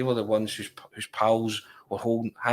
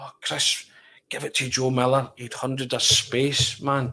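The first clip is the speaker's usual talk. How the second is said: furious, angry yell let rip; 3 semitones higher than usual. Retelling shouting at a player from the crowd: retelling own angry shout. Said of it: "I've just let rip".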